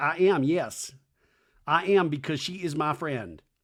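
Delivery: plain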